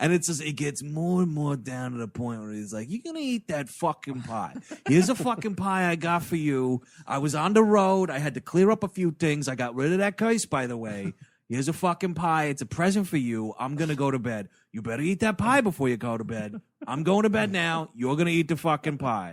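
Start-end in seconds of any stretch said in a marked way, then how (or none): 2.9-19.3 put-on Staten Island New York accent, playing evil. Retelling what the jolly old lawyer says later on, Staten Island-style voice. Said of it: "he is really Staten Island dumping this thing".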